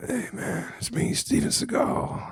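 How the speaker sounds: slow, drawn-out, breathy, hushed near-whisper. Answering a request to do impressions: Steven Seagal impression. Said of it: "can you do impressions?".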